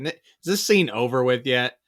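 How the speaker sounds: ordinary delivery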